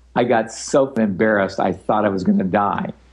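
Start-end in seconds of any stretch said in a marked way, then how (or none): none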